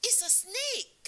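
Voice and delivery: very high, loud yell. Retelling being slapped by a snake, quoting a man: imitating a man shouting. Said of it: "he was shouting".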